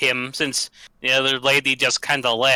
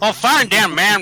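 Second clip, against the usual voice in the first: put-on Southern American accent, higher; 7 semitones higher, 5 dB louder than usual. During a tabletop game, told to roll the dice, in a put-on southern accent. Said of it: "I kind of find my southern accent's kind of good".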